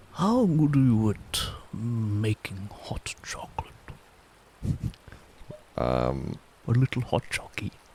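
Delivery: hushed whisper. Sneaking up on enemies, a character leans over to a companion: whispering. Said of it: "I lean over and I whisper".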